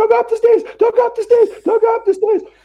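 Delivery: put-on very high, urgent, shrill, rattled-off repeated shouting. Describing people who shout at horror movies, imitating shouting at a horror movie. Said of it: "one of these people that shouts at the horror".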